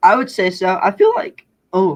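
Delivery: loud voice breaking partway through. Asked whether growing up hunting helped, the speaker answers; voice cracking. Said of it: "voice crack".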